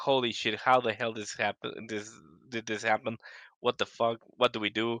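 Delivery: frantic, panicked, alarmed babbling outburst. Retelling a sudden shocking message while driving: imitating own panicked reaction. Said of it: "I'm freaking out".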